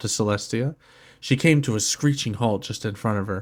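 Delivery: ordinary delivery, nothing marked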